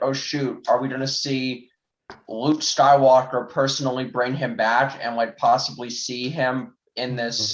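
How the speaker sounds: plain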